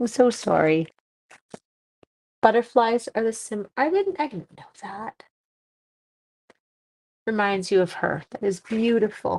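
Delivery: near tears, teary, choked-up, emotion catching. While playing a game, the speaker gets emotional and apologizes; teary. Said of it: "now we get teary".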